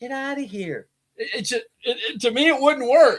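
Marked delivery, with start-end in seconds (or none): 0.0-0.9 very soft, hushed, gentle delivery. Arguing she wouldn't work as the bad guy, mimicking her line in Amber's soft voice. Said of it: "And her going".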